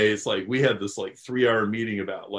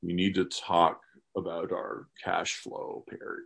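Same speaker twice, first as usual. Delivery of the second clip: grim put-on voice, lower and quieter; 4 semitones lower, 7 dB quieter than usual. Speaker retells what a caller said to him, in an Undertaker-ish voice. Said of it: "he sounds very Undertaker-ish".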